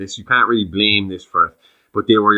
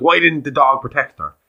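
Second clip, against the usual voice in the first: cross, angry, accusing tone; 6 semitones higher than usual. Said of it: "did she say it angrily".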